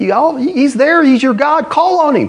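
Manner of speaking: mock, very high, scornful jeering tone. Retelling a man taunting others to call on their god, retelling a mocking taunt. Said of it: "He's mocking him".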